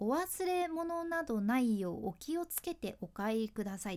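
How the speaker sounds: usual speaking voice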